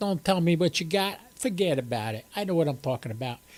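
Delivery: New Jersey accent. Ham radio host greeting listeners before a satellite pass, in a New Jersey accent. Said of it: "You like my New Jersey accent?".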